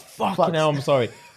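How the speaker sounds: high, howling, cracking up into laughter. Acting out how she might apologise after sneezing on his chips: imitating someone howling with laughter. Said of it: "starts howling like".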